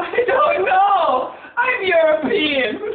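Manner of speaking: slow, drawn-out shouting yell. Asked by a scene partner why you are yelling, answer still yelling. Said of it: "Why are you yelling?".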